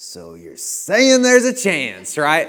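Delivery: mock, very loud, thrilled, swooping, rising excited exclamation. Retelling a guy told the odds are one in a million: imitating someone getting excited. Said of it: "he gets super excited about it".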